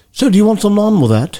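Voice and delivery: put-on British accent, pitched very high. Retelling an indian takeout worker in london: imitating a british accent. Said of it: "talking like a beetle and yet you're Indian".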